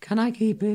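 put-on high, soft little-girl voice. A performer demonstrates a line for a colleague, in a little girl voice. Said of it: "really hard to do a little girl".

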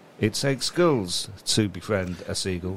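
usual speaking voice

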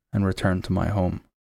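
usual speaking voice

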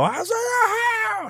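put-on excited, screaming child voice.

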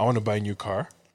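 normal talking voice

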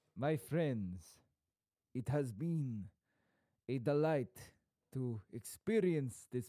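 lightly put-on, soft, hushed Romanian accent. Doing accents on request with another speaker; Romanian Count Dracula accent. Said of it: "I've gone a little bit Romanian".

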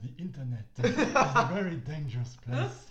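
very loud, booming put-on voice with swooping pitch. Retelling a documentary story, quoting a filmmaker in a Werner Herzog impression. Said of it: "And then Werner Herzog is like".

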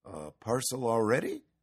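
ordinary delivery

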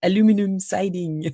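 put-on strong French accent, high pitch. Quoting how she always said a TV ad phrase: thick French accent. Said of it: "in a thick French accent".

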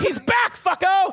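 loud, high, gleeful shouting. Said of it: "where you were like".

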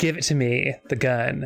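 plain

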